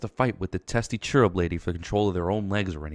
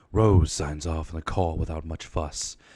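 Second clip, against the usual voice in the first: gruff, brooding, put-on caped-hero voice; 3 semitones lower than usual. Reading a page of a story aloud in a Batman voice. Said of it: "I'm going to read this in a like a Batman voice".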